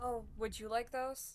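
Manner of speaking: mocking, dry sarcastic tone. Answering another party member in character: sarcastic. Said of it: "I say sarcastically".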